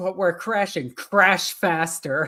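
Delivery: orc war boss voice. Retelling a trailer scene where the orc war boss escapes: Grimskull voice. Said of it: "the war boss Grimskull just going".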